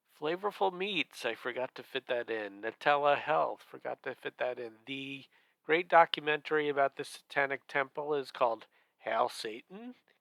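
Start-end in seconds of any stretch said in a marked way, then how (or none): 9.0-9.9 pitch rises at the end of satan. Saying a documentary title that ends in a question mark, rise on Satan like a question. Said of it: "I said it with a question mark because there is a question mark".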